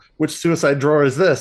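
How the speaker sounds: fast, panicky, rattled-off blurt. Retelling a scene, voicing a man grabbing at cabinets: imitating someone panicking. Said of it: "he's, like, panicking".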